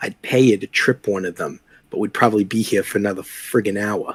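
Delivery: soft stage half-whisper, meant to be overheard. Speaking in character to Tomas so Jeanette overhears: half-whispering. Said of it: "I'd whisper to Tomas".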